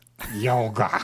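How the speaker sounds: put-on slurred, drugged-sounding speech. Retelling how someone drugged out answered a question: imitating a drugged slur.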